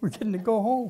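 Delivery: crying, speaking through tears, very high voice. Asking aloud why they are crying, then going on, crying while speaking. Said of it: "Why am I crying?".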